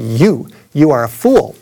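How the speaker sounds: acted, very slow, drawn-out street-preacher pronouncement. Recalling a man with a loudspeaker answering him, retelling a booming voice. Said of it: "he said with a booming voice".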